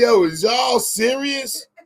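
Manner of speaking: high, slow, put-on talking through laughter. Retelling how a high man laughed at the police, imitating someone laughing while talking. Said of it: "smiling, laughing like".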